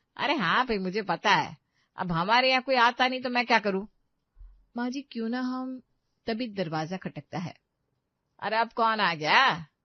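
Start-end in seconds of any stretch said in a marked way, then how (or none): 8.4-9.6 loud, slow, drawn-out, carrying holler. In a scripted scene, hearing a knock at the door, she calls out shouting. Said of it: "कहे इतना चिल्ला रही हो?".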